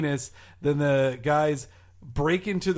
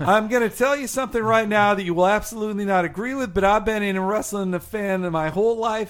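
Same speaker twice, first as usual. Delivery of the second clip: high, very bad, put-on Italian New York accent; 6 semitones higher, 4 dB louder than usual. Quoting an interview by a former WCW boss, in a put-on New York accent. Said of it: "Is he Italian now?".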